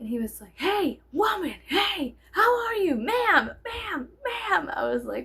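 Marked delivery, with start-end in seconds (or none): 0.5-4.7 very high, drawn-out acted yelling. Retelling how a man followed the speaker to the car, imitating his screaming. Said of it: "was screaming at me like I was a dog".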